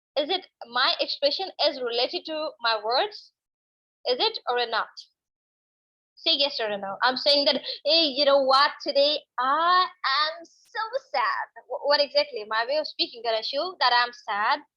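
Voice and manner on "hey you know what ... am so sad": cheerful, upbeat, drawn-out voice. Speaker shows Ganeshu that tone can contradict words: happy-sounding voice. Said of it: "I seem like I'm so happy right now".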